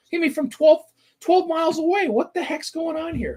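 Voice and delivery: very high, exasperated voice. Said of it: "people must have been just swearing".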